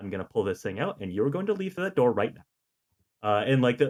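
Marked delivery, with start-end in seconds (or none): 0.0-2.4 put-on soft, direct voice, lower and quieter. Quoting a nurse helping him get out: imitating a nurse speaking softly and directly. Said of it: "just being very soft and direct with him".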